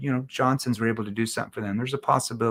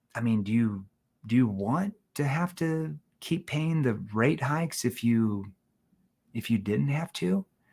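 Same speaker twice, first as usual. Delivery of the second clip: quieter, soft, dropped, lowered voice. Showing a sales pitch to a homeowner: lowered voice. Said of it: "Notice how I lowered my voice".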